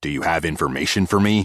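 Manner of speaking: deep, low, rumbling voice. Narrator reads a small greyhound questioning a shadowy figure: deep rumbling voice. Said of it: "his voice was deep and rumbling".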